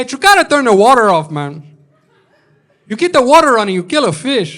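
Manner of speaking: very loud, high-pitched put-on tough gangster voice. Speaker announces his impression of woke Scarface, then does it: woke Scarface impression. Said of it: "This is my impression of woke Scarface".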